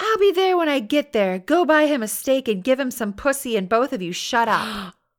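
mock shrill, loud, furious screeching. Retelling how her boyfriend's mother screeched at her on the phone, screeching. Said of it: "she screeched".

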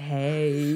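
put-on low, soft, deep, baby-ish "hey".

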